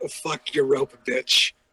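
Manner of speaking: yelling in character. Voicing a player character who yells at another character: yelling in character. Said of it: "Void just yells at Dakota".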